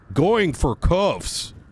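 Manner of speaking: snide, high-pitched, mocking sarcasm. Giving an example line in a roleplay, in a sarcastic mocking tone. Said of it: "done in a sarcastic manner".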